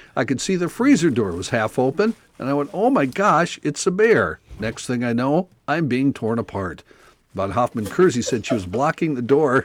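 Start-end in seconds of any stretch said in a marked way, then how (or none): none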